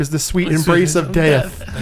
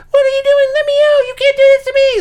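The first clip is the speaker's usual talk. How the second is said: very high-pitched, squeaky little voice; 4 dB louder than usual. Retelling a film's end scene where a character is trapped in a jar, high-pitched voice. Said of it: "Like kind of the high-pitched voices".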